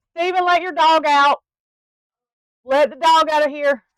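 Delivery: shrill, very loud, high-pitched shout. Yelling at someone in the next room to let the dog out: yelling at someone. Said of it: "let me yell at him".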